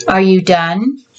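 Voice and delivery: ordinary delivery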